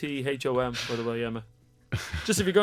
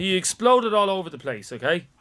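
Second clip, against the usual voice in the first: normal talking voice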